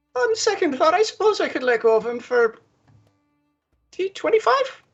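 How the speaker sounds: very high, sudden leap up by octaves. Voicing a frightened merchant giving in: voice goes up a couple octaves. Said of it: "his voice goes up a couple of octaves".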